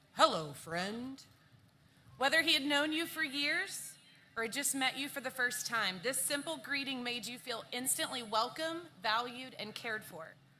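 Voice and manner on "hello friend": very deep, cheerful, jovial voice. Retelling how a mentor greeted everyone: imitating a deep jovial voice. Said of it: "said in a very deep but jovial voice".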